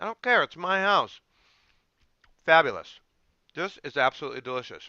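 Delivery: talking with mouth full. Tasting rice with kale, talking with food in mouth. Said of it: "I have food in my mouth".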